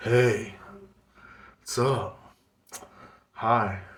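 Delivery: very slow, strange, weirdly altered voice. Speaker imitates how women guests change their voice when chatting: imitating a weird changed voice. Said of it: "they get like this weird voice. You can hear the voice change".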